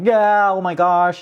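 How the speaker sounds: high, slow, drawn-out thrilled joy. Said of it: "I was just jumping for joy".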